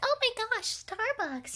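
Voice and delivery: put-on very high, gushing basic-girl voice.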